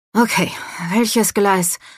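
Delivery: muttered breathlessly. A man stopping abruptly with his travel bag mutters, breathless. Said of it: "Murmelte er atemlos".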